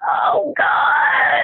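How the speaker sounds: high, tight moan. Retelling a birth, voicing the mother moaning with each contraction: imitating a high, tight moan. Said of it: "in this really high, tight voice".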